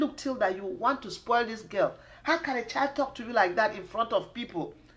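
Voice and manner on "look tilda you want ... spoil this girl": plain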